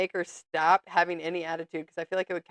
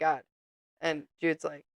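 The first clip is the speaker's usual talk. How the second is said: normal talking voice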